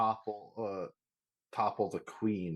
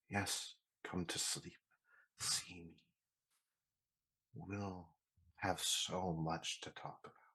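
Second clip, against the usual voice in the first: slow, soft, drawn-out feminine whisper; 2 semitones lower, 9 dB quieter than usual. Voicing a spirit that whispers in a sleeping character's ear: feminine whispering voice. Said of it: "the feminine voice whispering in your ear".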